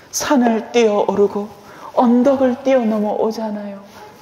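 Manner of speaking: high, lifted, swooning romantic lilt.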